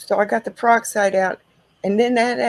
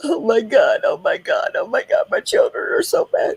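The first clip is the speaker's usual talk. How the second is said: theatrical put-on sobbing. Mother retells scolding her children in public: retelling a fake cry. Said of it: "did a fake cry".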